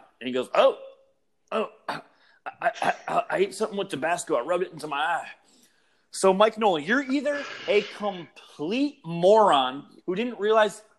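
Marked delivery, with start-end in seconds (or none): 0.5-5.3 put-on Southern accent, higher pitch. Retelling a coach's press conference excuse, imitating Mike Nolan's Southern accent. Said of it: "with his stupid little Southern accent".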